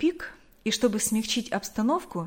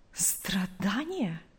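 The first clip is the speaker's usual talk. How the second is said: suppressed indignation, quieter; 7 dB quieter than usual. Narrator reads Nancy's one-word reply to a woman's offer of help, hiding indignation. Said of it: "Стараясь скрыть возмущение".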